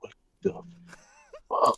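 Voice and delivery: muttered whisper under the breath, barely voiced. Playing a character walking to the alley: whispering under breath. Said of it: "I'm gonna whisper under my breath".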